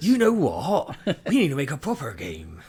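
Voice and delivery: loud pirate voice with big sing-song swings. Acting out farmers deciding to make a proper game: sounding like a pirate. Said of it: "I'm sounding more like, uh, a pirate".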